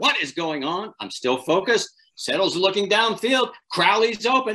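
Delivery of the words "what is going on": mild yell, kept light, acted out. Retelling a broadcast mishap, a voice in the earpiece: imitating someone yelling. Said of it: "He's yelling in this ear".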